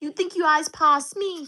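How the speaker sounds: put-on Guyanese-accented voice. Asked what a Guyanese accent is, speaker answers in an imitated Guyanese accent. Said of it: "what's a Guyanese accent? Oh my gosh".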